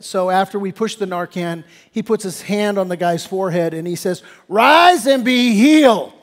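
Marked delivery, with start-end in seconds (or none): 4.5-6.0 theatrical, showy, slow, raised proclaiming delivery. Retelling a partner's words over a waking patient: imitating a theatrical healing proclamation. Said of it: "make a show of it".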